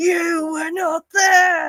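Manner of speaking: very high, furious shrieking scream. Describing a clip where a man freaks out at a lawyer, imitating a furious scream. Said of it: "absolutely freaks out at him and just screams".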